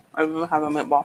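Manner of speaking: talking with mouth full while eating. Answering another speaker while eating a meatball: talking with mouth full. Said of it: "You got ball in your mouth?".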